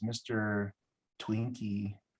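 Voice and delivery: put-on whisper. Retelling what a visitor at the door said: imitating someone whispering. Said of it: "he whispers to me and says".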